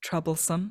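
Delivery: resonant, ringing, echoing voice. Storyteller voicing a floating figure whose mouth doesn't move, resonant echoing voice. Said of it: "The voice just resonates uh, in the very ice".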